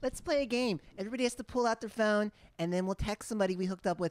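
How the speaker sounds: put-on Southern California blonde beach-girl accent and voice. Retelling what girls at a party said, in a Hermosa Beach girl accent. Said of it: "That's a specific accent he was doing".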